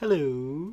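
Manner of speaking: hello stretched long and slow, nerd-style. Retelling how a customer said hello: drawn-out imitated hello. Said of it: "in the way I drew it out".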